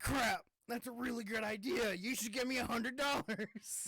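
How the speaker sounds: mock irate rant, squeaked very high and loud. Imitating the other speaker's promised fury at good news: imitating someone saying things angrily. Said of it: "You just say things angrily".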